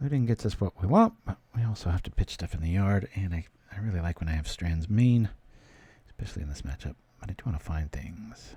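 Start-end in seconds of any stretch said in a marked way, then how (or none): 7.2-8.5 muttered whisper, much quieter and slower. Planning his next moves in a game, whispering to himself. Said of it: "I'm whispering to myself".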